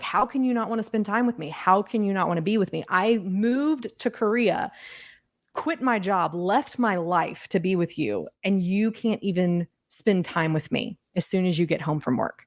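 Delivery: put-on crying, hurt, accusing, pleading tone. Retelling own past pleas to a husband after work: imitating own crying plea. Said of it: "just start crying of".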